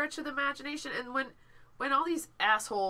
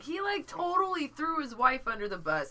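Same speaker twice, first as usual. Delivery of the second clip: ordinary talk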